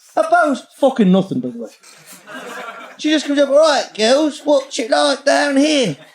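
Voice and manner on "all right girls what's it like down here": put-on Essex accent, pitched higher.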